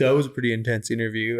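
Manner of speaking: put-on ironic, teasing, sarcastic tone. Retelling what someone said after a job interview: imitating a sarcastic remark.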